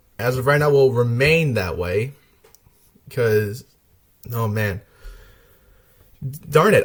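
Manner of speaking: teary voice, catching and breaking, choked up. Speaker talking about Linton, a favorite, starts tearing up: tearing up. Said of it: "I'm actually tearing up".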